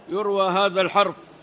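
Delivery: plain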